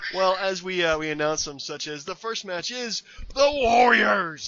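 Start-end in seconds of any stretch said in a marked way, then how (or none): 2.0-4.5 loud, high, booming but failed ring announcer voice. Trying to announce the first match in Vince McMahon's voice: failed Vince McMahon impression. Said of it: "I can't do his voice".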